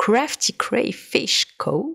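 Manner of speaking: put-on English accent. Naming the shop that inspired a creator's work, trying it with an English accent. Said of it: "Je vais essayer de le dire avec l'accent anglais".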